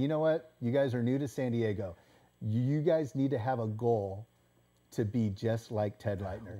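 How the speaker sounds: ordinary talk, nothing marked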